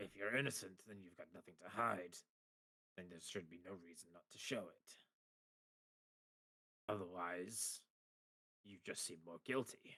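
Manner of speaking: grumbling, complaining tone. Game master voices the man in the middle interjecting again, grumbling. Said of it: "he grumbles".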